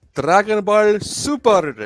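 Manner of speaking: bad attempt at fake Japanese accent. Saying the segment title again when asked: bad attempt at Japanese accent. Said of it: "I tried to sound Japanese".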